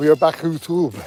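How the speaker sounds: shouted, screamed in a put-on French accent. Told to scream out loud, opening the video: screaming in a french accent. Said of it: "scream out loud in a French accent".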